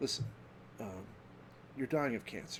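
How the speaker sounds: very soft, hushed, breathy, calm soothing voice. Imitating Malia, a doctor, delivering horrible news, imitating Malia's calming voice. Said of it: "he's got like this very calming voice".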